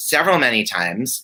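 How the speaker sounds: ordinary delivery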